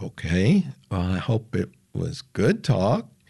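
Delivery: ordinary talk, nothing marked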